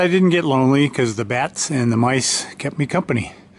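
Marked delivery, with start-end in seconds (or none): none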